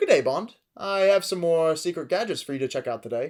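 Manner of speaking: relaxed, loose, carefree put-on voice. Mocking how Spectre's characters talk, in a relaxed, carefree Q impression. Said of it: "all of the characters come off as super relaxed".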